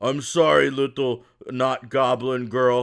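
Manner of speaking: big, loud ogre character voice. Narrating a role-play scene as the ogre stands up and speaks: ogre voice. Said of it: "the ogre kind of stands up and goes".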